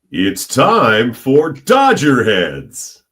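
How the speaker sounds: swooping ballpark stadium announcer delivery. Performing a show catchphrase on request in stadium announcer voice. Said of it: "how Todd Lights would say".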